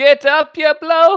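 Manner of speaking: very high, very loud tiny yell. Player's halfling calling to a fallen friend through the storm, shouting with little halfling lungs. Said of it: "I shout with my little halfling lungs".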